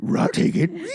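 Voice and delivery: cartoon talking-dog voice. Retelling a movie scene where the dog answers the bartender: Scooby-Doo voice. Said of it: "the dog sitting at the bar is like".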